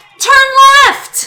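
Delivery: shrill, very high, very loud screaming. A mom retells her child shouting on the drive to school, imitating Mary screaming. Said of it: "kept screaming at me".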